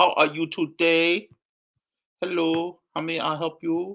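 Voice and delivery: high-pitched, put-on Chinese accent. Greeting a guest the way nail salon workers do: imitating nail salon workers. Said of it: "Chinese people do when you go into the, uh, nail salon".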